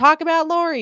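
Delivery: very high put-on yell. Retelling being told to cover Lori on the podcast: imitating people yelling. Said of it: "even though we're getting yelled at".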